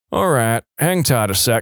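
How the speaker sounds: plain reading voice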